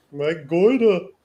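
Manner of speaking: put-on New York accent. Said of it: "gotta do it in a New York accent".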